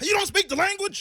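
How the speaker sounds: furious, shrill yelling, very high pitched. Telling a host about yelling at the Lyft driver: retelling own yelling at driver. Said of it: "Yelling at the Lyft driver".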